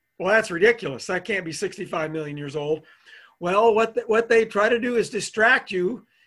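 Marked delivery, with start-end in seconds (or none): none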